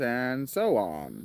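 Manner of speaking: grating, irritating read-aloud narrator tone. Complaining about the reader of a book he wants to reread: imitating an annoying audiobook reader. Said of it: "He reads like this".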